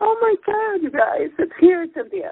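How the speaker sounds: very high voice, on the verge of tears. Telling Cynthia it's here finally, on the verge of tears. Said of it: "I'm gonna cry".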